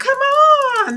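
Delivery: put-on high, loud, excited shout like a kid.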